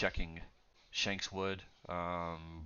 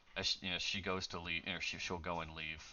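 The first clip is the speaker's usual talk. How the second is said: ordinary delivery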